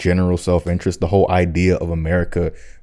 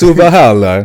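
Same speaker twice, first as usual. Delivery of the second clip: mock Italian accent, higher and louder; 7 semitones higher, 10 dB louder than usual. Repeating the Viking saying the way they said it, put-on Italian accent. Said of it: "They said an Italian accent just like that".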